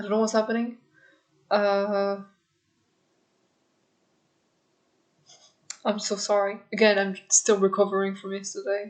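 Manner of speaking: tearful, holding back tears. Apologizing to viewers near the end of a video, tearful. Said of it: "I have tears coming up".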